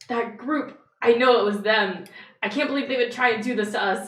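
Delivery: very loud, high-pitched panicked voice. Describing how townspeople will react, voicing a panicking accusing townsperson. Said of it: "people are gonna just kind of be panicking".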